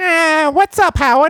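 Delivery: very high-pitched female voice. Finally placing the lady a co-speaker means, imitating the lady. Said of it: "she's like".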